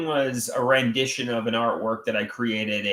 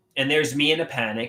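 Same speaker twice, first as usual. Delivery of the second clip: plain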